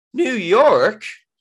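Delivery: voice breaking mid-word. Hearing that the other speaker is going to new york, voice cracking. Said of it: "Why did my voice break?".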